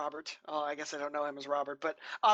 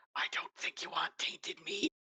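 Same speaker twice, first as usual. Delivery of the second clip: hushed, close whisper; 5 dB quieter than usual. Warning another character up close in a whisper: whispering in character. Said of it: "and I whisper".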